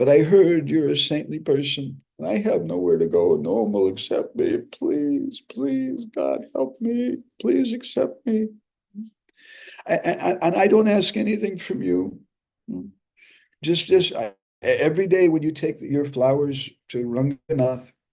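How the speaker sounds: mock crying, piteous pleading tone. Retelling a woman begging a brahmachari for help, imitating piteous crying. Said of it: "piteously crying like she was going to die".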